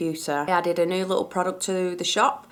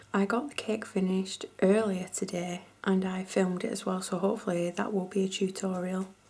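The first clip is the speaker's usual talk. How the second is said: quiet hushed whispering; 7 dB quieter than usual. Late at night with everybody in bed, talking to viewers, whispering a little. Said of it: "so I'm whispering a little bit".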